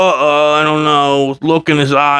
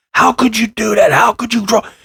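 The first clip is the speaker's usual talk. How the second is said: crazy, high, shrieking screaming yell; 7 semitones higher than usual. Recounting overhearing one brother yell at another, imitating someone screaming. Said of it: "his brother was screaming at his younger brother".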